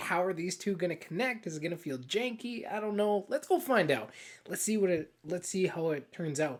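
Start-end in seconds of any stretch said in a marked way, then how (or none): none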